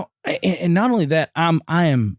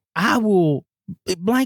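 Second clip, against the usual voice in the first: angry, ranting, spat out, screaming in a rage; 4 semitones higher than usual. Retelling a confrontation, the speaker repeats what a man yelled at him, imitating someone screaming. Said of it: "he's screaming like".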